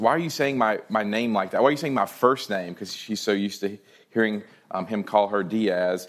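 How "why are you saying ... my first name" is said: normal talking voice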